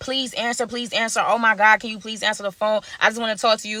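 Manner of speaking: put-on, desperate pleading tone. Retelling a friend's nonstop calls: imitating Diana pleading. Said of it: "Diana is calling me nonstop".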